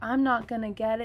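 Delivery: crying, tearful, self-pitying lament. Retelling a son's words before a spelling test: imitating a crying child. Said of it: "he'll even start crying 'cause he's like".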